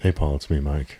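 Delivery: very soft, hushed talk, barely above a murmur. Podcast co-host greeting the other host on their soothing episode, speaking very softly. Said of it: "We're all talking very softly tonight".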